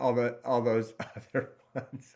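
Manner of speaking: words broken up by laughter, laughing while talking. Listing the senses and losing track, laughing while talking. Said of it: "I'm still laughing at myself".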